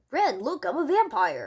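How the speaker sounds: put-on cartoon cat character voice. Showing Stimpy as a vampire: Stimpy voice. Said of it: "That's my best impression of Stimpy".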